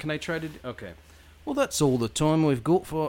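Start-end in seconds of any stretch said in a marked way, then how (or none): 1.4-3.1 put-on British accent. Host, asked by the co-host, reads the end credits in a put-on British accent. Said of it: "end credits in your British accent".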